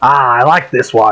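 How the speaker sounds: put-on hearty laugh in a captain voice. Voicing a captain reacting to a player blacking out: laughing heartily as Captain Beard. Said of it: "Captain Beard just has a hearty laugh and he says".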